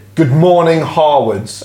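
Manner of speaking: fed-up, exasperated but professional tone. Showing how they open calls they hate, in an exasperated tone. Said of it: "an exasperated what tone of voice".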